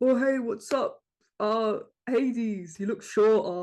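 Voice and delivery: slow, silly, goofy put-on voice. Retelling how a character greets the others, imitating a silly voice. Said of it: "but is sillier".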